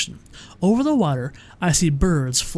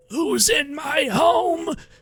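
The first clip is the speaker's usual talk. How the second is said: put-on very high, very slow, raspy old woman voice; 11 semitones higher than usual. A narrator reads an old woman's line in a story, in a raspy voice. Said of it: "says a raspy voice".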